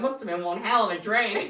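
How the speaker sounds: put-on broad bogan Australian voice. Retelling what a woman said to the speaker, in a proper bogan Australian voice. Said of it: "in like a proper bogan Australian voice".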